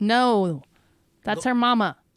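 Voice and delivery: full-throated, very loud yell. Insisting the other speaker knows an actress's name: yelling. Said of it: "Why are you yelling?".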